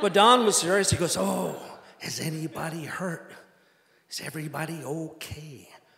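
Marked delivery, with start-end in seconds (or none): 1.2-5.7 exaggerated Midwestern accent, drawn out, slow, soft. Retelling what Don said on arriving at the dock, Don's exaggerated Midwestern accent. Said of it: "He had kind of a exaggerated Midwestern accent".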